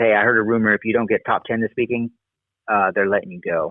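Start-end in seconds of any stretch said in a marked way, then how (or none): none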